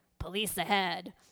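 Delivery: low, soft, raspy voice. Retelling warnings that interrupted a drive, gravelly Cookie Monster voice. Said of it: "in that gravelly voice".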